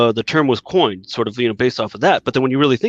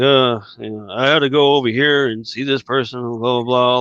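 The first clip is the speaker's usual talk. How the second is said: acted, bored, couldn't-care-less voiceover narration. Imitating a disinterested voiceover narration: imitating Harrison Ford's bored narration.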